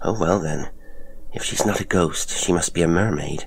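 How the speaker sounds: ordinary delivery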